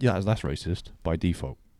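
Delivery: normal talking voice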